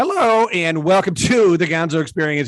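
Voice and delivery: voice cracking mid-line. Opening his show and welcoming a guest, the host speaks with his voice cracking. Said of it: "with a crack in my voice".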